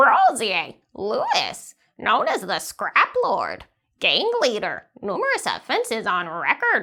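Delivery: animated, swooping raven voice. Voicing the Raven as it scans a person and reports: Raven voice. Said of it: "So that's our Raven voice".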